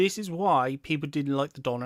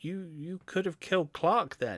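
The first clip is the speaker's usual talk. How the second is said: irritated, put-out, ticked-off tone; 4 dB quieter than usual. Retelling a scene where a character answers after being shot at: imitating a ticked-off tone. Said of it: "it's really kind of ticked off".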